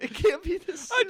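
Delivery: acted tearful crying voice. Retelling the moment a concert ended, retelling own crying. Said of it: "I started crying".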